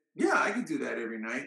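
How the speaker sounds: usual speaking voice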